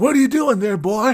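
very high piping voice, pitched way up high. Imagining his face staring from the toilet paper: imitating Michael Rooker. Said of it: "and he's just like".

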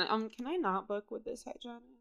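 soft, hushed, half-whispered stage whisper. Retelling asking the desk to switch hygienists: imitating own half-whisper. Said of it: "whispering 'cause she's, like, over there".

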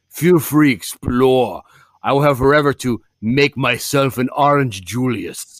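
slow, deliberate, each word drawn out. Imitating how the horror villain Pinhead talks in voiceover: Pinhead voice. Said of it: "He's like".

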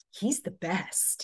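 slow, snarky sarcasm.

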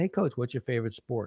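playful, joking tone. Retelling a question he put to his coach, retold joking tone.

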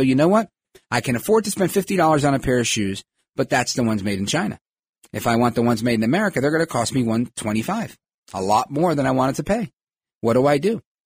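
ordinary delivery

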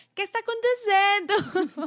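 put-on, loud, very high, out-loud call-out. Retelling how a companion called out a Portuguese phrase: imitating a loud call. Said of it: "Y Benji dice en voz alta".

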